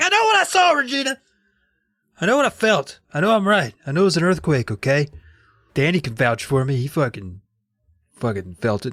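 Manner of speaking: put-on defensiveness. Retelling to a friend how a man reacted when teased about his story, acting out his reaction, imitating a defensive tone. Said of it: "Regina's teasing Todd".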